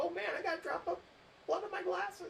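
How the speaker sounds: high-pitched excited squeal.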